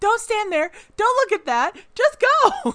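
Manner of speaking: very loud, very high-pitched hollering. Retelling yelling at characters in horror movies: imitating own yelling at movie. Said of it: "I'm yelling at them".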